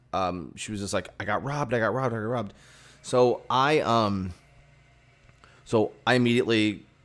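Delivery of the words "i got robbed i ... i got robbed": mock fast, frantic, panicked sobbing, repeated cry. Retelling a neighbor's girlfriend crying outside: imitating someone crying and panicking. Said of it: "she was outside crying and, like, freaking out".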